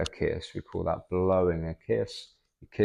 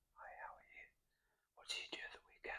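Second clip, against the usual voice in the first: fast, very quiet, barely voiced whisper. Showing what whispering sounds like during a lesson on verbs: whispering. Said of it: "I am whispering".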